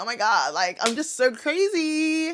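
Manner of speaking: slow giggly laughing voice, crazy and drawn out. Criticizing someone who came on laughing after doing something shocking, imitating someone giggling. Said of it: "you're coming here laughing, giggling".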